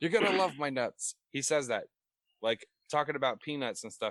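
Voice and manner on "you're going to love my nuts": loud, high-pitched, punchy infomercial pitchman voice. Retelling a line from a Slap Chop commercial, imitating the Slap Chop pitchman. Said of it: "He goes".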